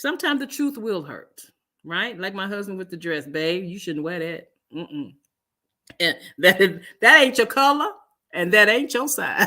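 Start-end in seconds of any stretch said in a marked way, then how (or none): 6.0-9.5 laughing through the words. Speaker quoting her husband about a dress, laughing while speaking. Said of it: "I'm sorry, I'm just laughing".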